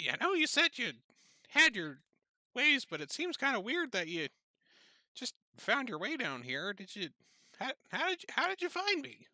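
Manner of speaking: very high, hesitant, puzzled and halting. The narrator voices Honest Bob speaking to a visitor: high-pitched Honest Bob voice. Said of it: "you've been kind of hearing this kind of high pitched voice talking to [name] over here. / and you know he sees you getting closer, / I can't I can't really say all I've ever known is doing business i".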